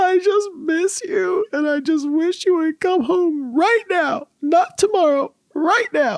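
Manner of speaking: very high, tearful, bawling sob. Retelling a child's words on the phone: imitating a child crying. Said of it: "bawling, crying".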